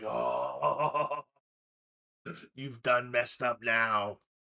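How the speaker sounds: sibilant, swooping, hissing vampire voice. Game master voices a fanged foe the player just bit, hissing vampire voice. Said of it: "he hisses at you".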